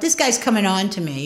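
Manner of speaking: usual speaking voice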